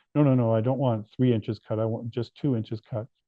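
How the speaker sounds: plain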